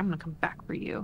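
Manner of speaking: play-acted, seething, furious vow in a whisper. Voicing a character threatening the people who got away: really mad. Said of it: "he's real mad. He's like".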